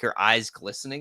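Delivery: plain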